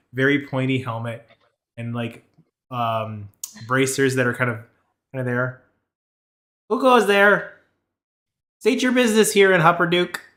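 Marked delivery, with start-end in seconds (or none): 6.6-10.0 high, loud, small gnome voice calling out. Voicing a little gnome guard calling down from the gates: gnome guard voice. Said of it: "little gnome has his hands over the side".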